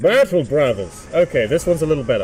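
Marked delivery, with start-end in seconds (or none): 0.0-1.1 echoing voice, spoken into a cup. Asked for a Space Marine voice, trying again speaking into a cup. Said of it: "If I speak into a cup".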